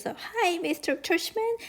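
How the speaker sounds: fake high old-woman voice. Retelling a father greeting Mr. Tushman, in a fake high old-lady voice. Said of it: "He was using a fake high old lady voice".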